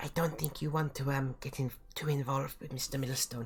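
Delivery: whispering in a character voice. Voicing Faye sending another magic message to Manny: whispering in character. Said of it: "But I have to whisper it".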